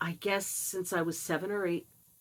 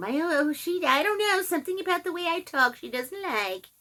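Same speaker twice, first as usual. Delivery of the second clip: much higher, complaining woman's voice. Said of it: "she'll go complain to someone".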